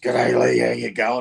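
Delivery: rough-edged, creaky, rasping voice. Retelling how William Smith greeted him at the gym: imitating William Smith's voice. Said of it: "he had that voice".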